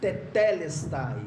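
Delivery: tetelestai, second syllable te stressed. Teaching how to pronounce tetelestai, stress on second syllable te. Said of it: "a sílaba tônica está na segunda".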